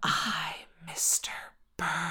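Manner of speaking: slow, creepy, ghostly, sinister drawn-out whisper. Describing what people hear in the Oval Office, a sinister drawn-out whisper. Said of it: "a sinister whisper drawn out like".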